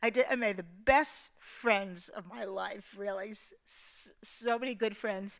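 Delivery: tearful, choking up, on the verge of tears. Speaker admits crying again while sharing a memory, tearful, about to cry. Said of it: "I'm gonna cry again".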